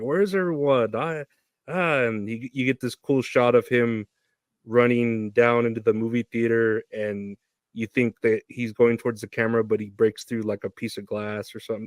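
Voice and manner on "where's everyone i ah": mild half-yell, volume held modest. Retelling a film scene where a character yells out loud: imitating someone yelling at top of lungs. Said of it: "He's yelling it at the top of his lungs".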